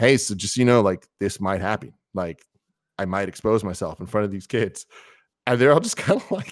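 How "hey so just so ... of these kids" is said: mock deadpan delivery, flat. Retelling how he warned the kids' parents, imitating deadpan delivery. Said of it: "he's so deadpan".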